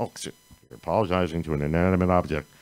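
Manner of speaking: fast playful aside muttered to himself. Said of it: "popped out of me playfully".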